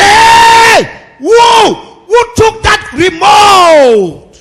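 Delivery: play-acted very high, very slow roaring yell. Imitating a husband who shouts while quarreling with his wife: imitating a shouting husband. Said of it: "They can shout".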